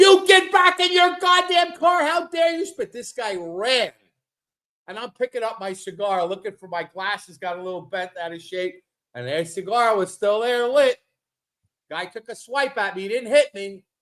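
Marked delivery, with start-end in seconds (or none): 0.0-2.9 very high-pitched, shrill, loud screech. Retelling a roadside fight, imitating his wife screaming at the other driver. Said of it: "My wife starts screaming at him".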